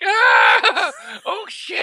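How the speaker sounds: shrill, very high, swooping creature scream. Speaker describes a film creature left behind as the ship flies away, imitating E.T. screaming. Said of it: "He's like".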